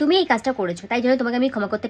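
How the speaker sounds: rattled off at storm speed, rushed, no pauses. Acting lesson on pausing in memorized dialogue, line rushed out with no pauses. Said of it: "এইভাবে ঝড়ের স্পিডে তো বলতে পারবো না".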